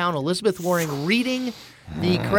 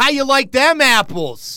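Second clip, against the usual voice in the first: bad put-on Boston accent, loud, drawn-out; 6 semitones higher, 5 dB louder than usual. Offering an impersonation to the others: Boston accent impression.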